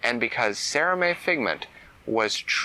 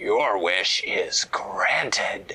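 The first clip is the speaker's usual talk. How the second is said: low put-on storybook-style dragon character voice; 5 semitones lower than usual. Reading a story aloud, voicing a character in her wish dragon voice. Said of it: "she said it in her wish dragon voice".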